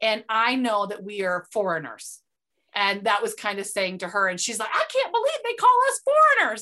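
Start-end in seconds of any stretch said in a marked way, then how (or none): 4.7-6.6 put-on Southern accent, very high and loud. Retelling what a loud American woman said to her: Southern accent. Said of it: "I'm giving her a Southern accent".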